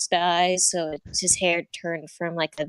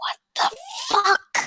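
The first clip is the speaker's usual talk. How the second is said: very high, pitched-way-up whisper. In a roleplay, [name] grabs Shanty's arm and leans in, whispering. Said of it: "leans in and whispers".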